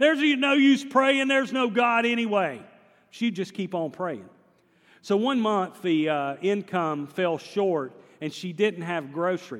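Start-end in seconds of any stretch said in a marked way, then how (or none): 0.0-2.6 high-pitched yell. Speaker retells a man yelling through the window at a praying woman, retelling a yell. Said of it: "he'd yell in the window".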